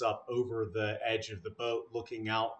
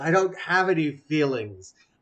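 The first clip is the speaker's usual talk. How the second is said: very loud, all-out, high-pitched shout; 5 semitones higher, 9 dB louder than usual. Retelling a scene where a patient shouts at an acupuncturist: retelling a shout. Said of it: "and she shouts".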